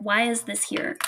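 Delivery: normal talking voice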